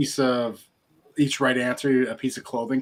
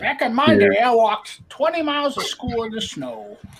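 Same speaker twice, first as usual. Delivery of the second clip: very high pitch swooping up and down; 10 semitones higher, 4 dB louder than usual. Joking with the others in an Adam Sandler character voice. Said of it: "what Adam Sandler character did that sound like".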